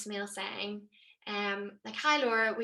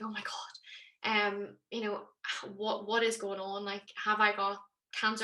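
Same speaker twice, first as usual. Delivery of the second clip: ordinary delivery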